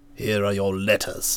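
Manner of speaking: stiff, very low-voiced, quiet delivery. Narrator reads Stilton opening the conversation with her, said stiffly. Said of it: "He said stiffly".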